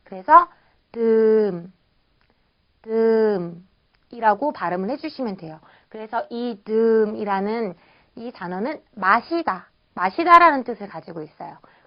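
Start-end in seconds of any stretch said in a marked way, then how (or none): 0.9-1.7 pitch drops across 듬. Teaching the tone of a word, falling tone on 듬. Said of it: "성조는 일성, 떨어지는 성조예요".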